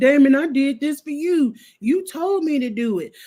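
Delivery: put-on slow, desperate, begging plea. Retelling a scene where someone begs Damon: imitating begging and pleading. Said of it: "he over there begging and pleading".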